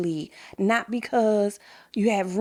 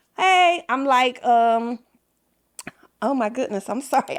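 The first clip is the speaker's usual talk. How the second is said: sudden, raised, emotional outburst; 4 semitones higher, 5 dB louder than usual. Speaking to her listeners about sounding the horn, she gets emotional. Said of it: "I didn't know I was going to be emotional".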